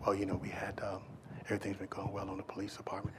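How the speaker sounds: put-on quiet, gentle, soft-spoken male voice. Imitating a man speaking at police roll call, soft-spoken. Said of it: "you ever met a person that's soft spoken? ... he talked like this".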